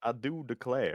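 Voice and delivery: put-on Southern accent. Trying out accents with friends, the speaker does a put-on southern accent. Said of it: "I was gonna try to do a southern accent".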